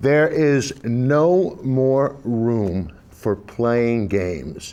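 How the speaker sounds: very low, deliberately calm, drawn-out "no". Asked to explain in a calm voice during a dispute; forced calm. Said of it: "let me say this as calmly as I possibly can".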